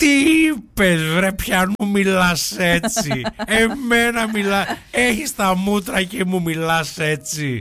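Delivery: high, slow, irritated put-on comic-actor voice. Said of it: "η φωνή μου γυρνάει σε τσάκωνα".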